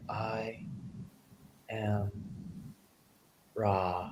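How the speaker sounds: hushed, very slow, each word set apart. Acting out how she spoke in every transmission, very slow, word by word. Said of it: "it's very slow. It's like I am Ra, and word by word like that".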